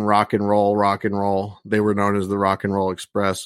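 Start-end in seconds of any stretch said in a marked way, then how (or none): none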